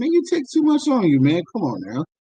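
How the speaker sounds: mocking, sarcastic tone with swooping pitch. Explaining a Bible passage, acting out the people's words to Moses: acting out a sarcastic complaint. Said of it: "They're being sarcastic".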